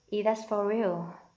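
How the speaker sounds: usual speaking voice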